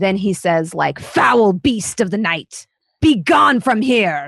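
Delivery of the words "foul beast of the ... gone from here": grand, booming, menacing, threatening villain voice. Voicing a vampire clinging to the ceiling, baring fangs: changed, booming villain voice. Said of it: "his, like, voice has changed".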